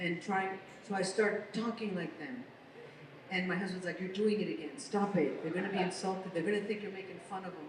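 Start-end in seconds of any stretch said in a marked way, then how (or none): none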